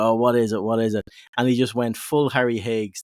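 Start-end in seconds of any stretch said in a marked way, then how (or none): none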